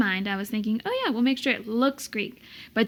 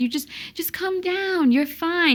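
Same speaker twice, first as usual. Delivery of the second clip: dry, kindly teasing, pitched-up, sarcastic reassuring tone; 7 semitones higher than usual. Retelling how the officiant calmed them down: imitating Father Serge's way of talking. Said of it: "He kinda talked like this".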